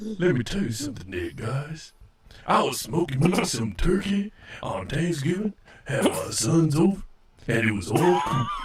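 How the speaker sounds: deep, smooth put-on voice. Imitating a friend greeting everybody: deep voice imitating Jay Manley. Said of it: "is this deep enough?".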